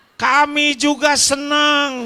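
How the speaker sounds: high, loud, teasing, jokey tone.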